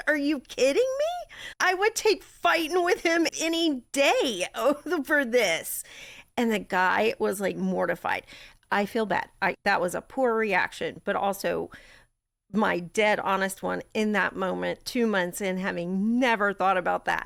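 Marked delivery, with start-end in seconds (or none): 0.1-5.8 mock furious, high, swooping angry shouting outburst. A widow retells yelling at a man who compared his divorce to her loss. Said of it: "And I just started yelling".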